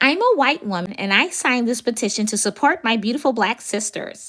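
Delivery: affected, put-on prim young woman voice.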